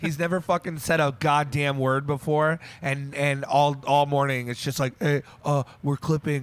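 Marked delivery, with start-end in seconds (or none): 5.0-6.4 mocking voice made to sound like an idiot. Retelling how a friend kept pointing out clipping, sounding like an idiot. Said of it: "I'm gonna make you sound like an idiot".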